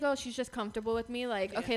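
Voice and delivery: ordinary talk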